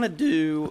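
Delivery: voice cracks and breaks mid-phrase. Narrating while placing blocks in a game, the speaker's voice cracks. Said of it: "voice crack".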